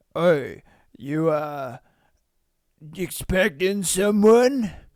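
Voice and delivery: slow, mocking, smarmy eighties-style voice. Reacting to a man's line, redo it in an eighties douchebag voice. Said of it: "He sounds like an eighties douchebag kind of thing".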